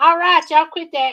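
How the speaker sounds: hollering voice. Retelling a mother's message on the answering machine: imitating mom hollering. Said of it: "she'd start hollering".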